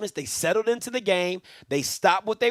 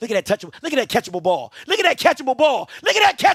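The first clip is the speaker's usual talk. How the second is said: overexcited, loud, climbing, barely contained commentary delivery; 5 semitones higher, 5 dB louder than usual. Reacting live to a play in a game he is watching: hyped. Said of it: "I'm just too hyped right now".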